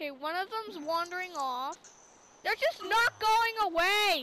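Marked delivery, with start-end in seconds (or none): 2.4-4.2 angry and annoyed voice. Waiting for night to be over so the speaker can kill creepers, angry. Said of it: "You're so mad".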